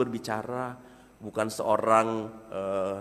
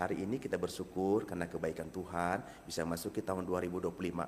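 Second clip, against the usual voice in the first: dead level, very flat monotone, no intonation at all; 5 semitones lower, 10 dB quieter than usual. Demonstrating a line of thanks without intonation, very flat. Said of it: "Flat sekali".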